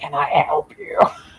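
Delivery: bottom-of-the-range deep, low voice. Retelling a bearded woman turning to a man following her: real deep voice. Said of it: "she goes in this real deep voice".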